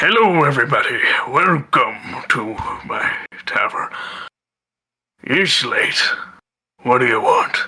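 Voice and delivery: drowsy, half-asleep, just-roused voice. Voicing a bartender who was nodding off, greeting the group: sleepy bartender voice. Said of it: "nodding off to sleep".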